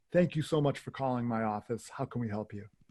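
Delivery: ordinary delivery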